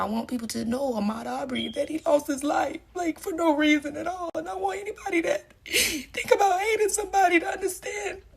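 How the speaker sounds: crying while talking. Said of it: "I'm so sorry I'm crying right now".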